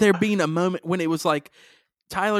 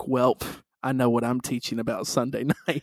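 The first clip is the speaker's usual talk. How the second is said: put-on muttering under breath, lower pitch; 6 semitones lower, 4 dB quieter than usual. Retelling a remark after the daughter cheated at cards: imitating muttering under breath. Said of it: "said under my breath".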